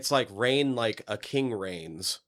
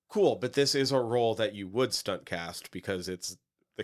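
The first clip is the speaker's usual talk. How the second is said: ordinary delivery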